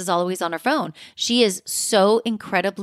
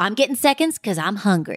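put-on announcer voice. Imitating how a cast member always announces she's eating: imitating Erica. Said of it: "She always says".

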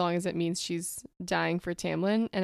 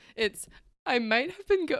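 higher, words broken up by giggles; 7 semitones higher than usual. Starting chapter 33 with a co-host, giggling while talking. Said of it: "I just have the giggles".

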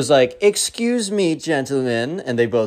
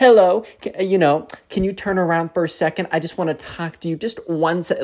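put-on patronizing, condescending baby-talk tone; 4 semitones higher than usual. Describing a tone some people use, then demonstrating it: condescending babying voice. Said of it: "kind of like a babying voice where they try and baby you, but it's also super, super condescending".

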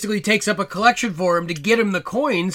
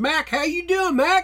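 put-on Texan accent, pitched very high, buddy-like; 10 semitones higher than usual. Describing a movie's side character, doing his texan accent. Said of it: "a real Texan buddy who kinda sounds like this".

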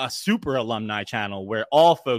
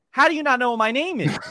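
high-pitched, loud, exasperated shouting. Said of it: "And I'm like".

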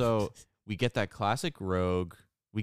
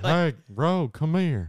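high, loud, cartoonish, silly holler; 7 semitones higher, 6 dB louder than usual. Doing an impression of Cody calling Rogue, Cody voice with Goofy mixed in. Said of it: "A little Goofy mixed in".

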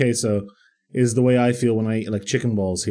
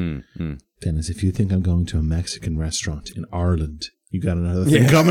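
cold, chilly, low, dead-serious tone; 6 semitones lower than usual. Retelling how Amashi answered a Mexican restaurant suggestion, imitating Amashi's chilly tone. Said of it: "with a chill, like, in his voice".

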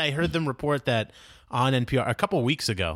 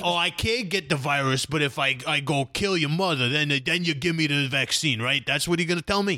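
put-on Staten Island guy voice. The speaker acts out an imagined person: Staten Island guy impression. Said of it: "you're a Staten Island guy".

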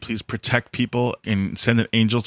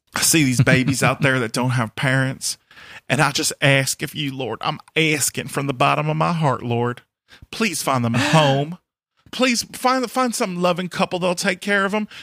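put-on Southern US accent with pleading tone; 4 semitones higher than usual. Acting out someone praying; put-on Southern accent. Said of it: "I put a Southern accent on it".

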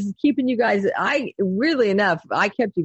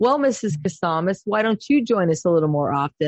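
very smug, mock self-satisfied tone; 2 semitones lower than usual. Parent retells what a coach said to her in a meeting, mimicking him smugly. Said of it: "really smugly".

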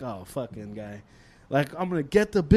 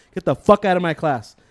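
put-on furious teacher voice, louder; 3 dB louder than usual. Retelling how a teacher swore at a student to leave class, acting out a furious teacher. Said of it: "you could see him getting like super pissed".

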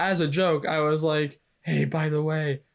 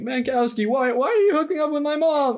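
very high, bad put-on voice; 11 semitones higher, 4 dB louder than usual. Acting out a line for a character in a Jerry Seinfeld voice. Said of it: "I gave him Jerry Seinfeld's voice".

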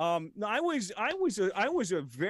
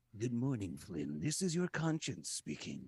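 very deep, low, hushed, sinister evil voice; 9 semitones lower, 8 dB quieter than usual. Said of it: "you sound a lot more evil today".

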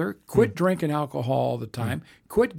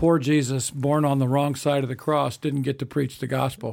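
ordinary talk

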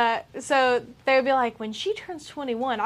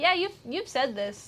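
awkward, somewhat quieter delivery; 2 semitones higher, 7 dB quieter than usual. Retelling a reply to a driver repeating himself: imitating own awkward reply. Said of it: "I'm just sitting there awkwardly like".

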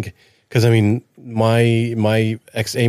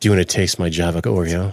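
deeper voice, lower; 4 semitones lower than usual. Offering coffee flavored Oreos after being asked to redo it: deeper voice. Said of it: "say it with your deeper voice".

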